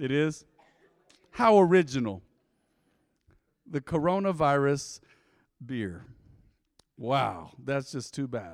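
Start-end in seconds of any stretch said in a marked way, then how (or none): 1.3-8.5 dry, mocking sarcasm, slow and swooping. Joking about a beer named corona losing stock value: sarcastic. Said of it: "Note my sarcasm".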